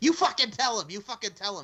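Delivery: put-on Boston accent. Speaker recounts a scene, quoting a man's line in a Boston accent. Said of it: "in the Boston accent".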